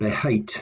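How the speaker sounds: stress on hate, be kept light. Teaching that the prefix be is never stressed: stress on hate. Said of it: "Notice the stress was on hate".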